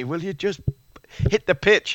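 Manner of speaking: play-acted urgent shout. Retelling the captain yelling at the bowler: imitating Freddie shouting. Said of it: "Freddie's shouting at me".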